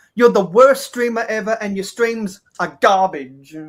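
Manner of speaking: loud, ironic, tongue-in-cheek, sarcastic mock tone. On a stream, teasing the streamer after talk of people calling him bad, sarcastic mock insult. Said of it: "I'm going to be completely sarcastic and ironic".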